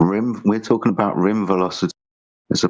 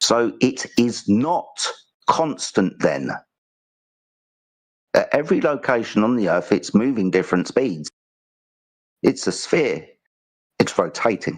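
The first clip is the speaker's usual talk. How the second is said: slow, calm, deliberate, unhurried, word by word. Telling the other speaker not to interrupt, the speaker explains their point, slow and calm. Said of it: "I'm speaking slowly and calmly".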